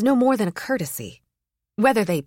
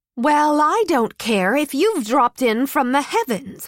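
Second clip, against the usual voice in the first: sharp snapping tone, much higher; 5 semitones higher, 4 dB louder than usual. Narrator voicing a woman answering a man who ignored the queue, sharp retort. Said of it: "she retorted".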